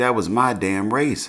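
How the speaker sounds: ordinary delivery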